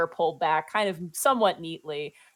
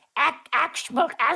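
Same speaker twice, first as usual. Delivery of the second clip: goblin orc gibberish voice, pitched higher; 9 semitones higher than usual. Voicing a goblin at the door who speaks Orc: goblin speaking Orc. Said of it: "you watch as a goblin looks up".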